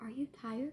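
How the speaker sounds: hushed, very soft, ghostly female half-whisper. Retelling a voice heard while lying in bed: imitating a woman half-whispering. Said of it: "a woman whisper".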